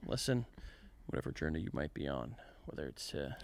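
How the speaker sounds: low, hushed, breathy near-whisper in a narrating voice. Trying out a narrator voice mid-conversation: hushed low narrator voice. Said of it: "Why are you whispering?".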